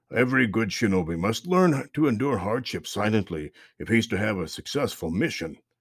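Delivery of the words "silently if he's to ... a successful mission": plain reading voice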